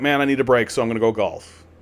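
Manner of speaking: ordinary talk, nothing marked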